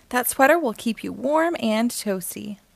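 ordinary delivery, nothing marked

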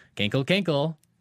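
put-on Kentucky accent. Pronouncing an odd name the way people in Kentucky would: Kentucky accent. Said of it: "I will pronounce it the way they would in Kentucky".

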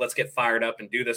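ordinary talk, nothing marked

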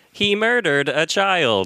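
cheerful, smiling text-to-speech robot reading voice. Joking about things read by voice assistants, doing the TikTok voice. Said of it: "Read by the TikTok voice".

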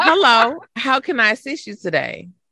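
courteous, polite, scripted call-center customer service voice. Showing how a greeting would sound, in a customer service voice. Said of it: "Not the customer service voice".

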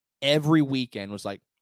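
ordinary talk

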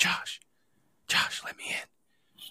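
very slow, hushed, pleading whisper. Retelling how his wife called through the latched bedroom door: imitating someone whispering. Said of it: "she whispers".

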